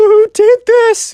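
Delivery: mock very high crying whimper, full of rage. Retelling a story, acting out the shocked Minecraft kid, imitating a crying, whimpery voice. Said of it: "kind of like a crying, whimpery voice".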